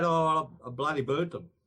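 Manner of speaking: ordinary delivery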